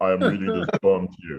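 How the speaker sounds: pretentious, affected, exaggerated poetry-reading voice. Showing the voice readers should avoid: affected poet voice. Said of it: "avoid is poet voice".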